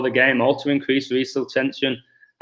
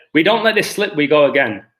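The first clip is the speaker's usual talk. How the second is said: clumsy, horrific put-on Scouse accent; 2 semitones higher than usual. Retelling what he said after beating Man City, in a horrific Scouse accent. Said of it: "I apologise for my horrific um, Scouse accent".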